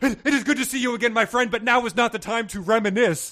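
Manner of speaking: frantic, urgent call, very high and very loud. Narrator voicing Babatunde greeting an old friend, frantic. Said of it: "Babatunde said frantically".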